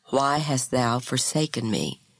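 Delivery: ordinary delivery, nothing marked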